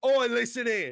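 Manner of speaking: high, loud Cockney voice. Speaker voicing some random guy: cockney accent. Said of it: "some random Cockney guy, because that's the accent I can do".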